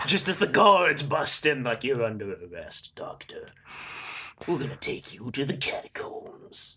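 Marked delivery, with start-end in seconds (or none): 1.8-6.8 hushed, breathy character voice. Voicing the guards arresting the Doctor: Agent Smith voice. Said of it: "I did the Agent Smith thing there".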